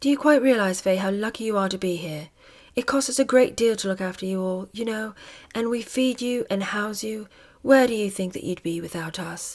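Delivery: slow, deliberate, controlled, held-in delivery. Reading aloud a princess scolding her dresser: controlled, flat voice. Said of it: "in a controlled, flat voice".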